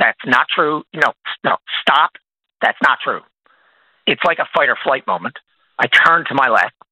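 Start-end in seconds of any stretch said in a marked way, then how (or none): 0.0-3.2 mock hard, very firm, shutting-down, off-putting tone. Retelling an overheard conversation, the speaker quotes someone on the left: retelling a firm, off-putting voice. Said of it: "in a very firm and off-putting voice".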